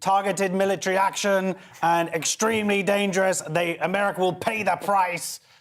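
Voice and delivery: put-on mechanical robotic delivery. Reading a newspaper headline aloud in a put-on robot voice. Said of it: "So I'm gonna do a robot accent".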